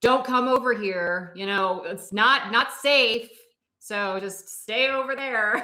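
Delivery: shouted, loud voice. Playing a character warning another to stay back: yelling a warning in character. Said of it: "she's gonna yell in the process".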